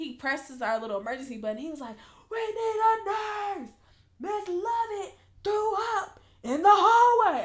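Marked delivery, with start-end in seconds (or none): 2.3-7.4 very high, shrill, very loud yell. Retelling the neighbouring coworker pressing the emergency button, retelling a yell. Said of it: "Why are you yelling this in the hallway?".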